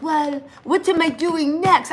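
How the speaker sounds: slow, halting, choppy phrasing. Retelling what Simon said on a live video: imitating Simon's choppy accent. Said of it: "I'm trying to do his accent".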